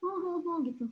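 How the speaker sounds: quiet, hushed, whimpering oh-oh-oh sobbing. Explaining the word weeping, acting out the baby's mother about to cry: mock weeping sounds. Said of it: "Weeping itu nangis, tapi kayak".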